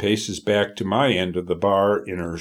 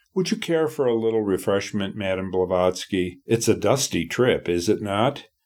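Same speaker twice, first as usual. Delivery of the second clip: ordinary delivery, nothing marked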